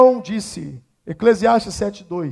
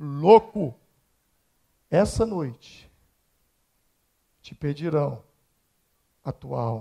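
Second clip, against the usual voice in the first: very deep, very quiet otherworldly voice; 8 semitones lower, 9 dB quieter than usual. Retelling a parable, the speaker takes the voice that speaks: voice from beyond. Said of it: "Essa voz do além é por minha conta".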